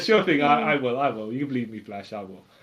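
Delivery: low voice, sincere yet with a sarcastic ring. Acting out a comic villain promising Flash to go to jail: voicing Trickster, sarcastic-sounding but sincere. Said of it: "he does it non-sarcastic, like, so, you know, it sounds sarcastic".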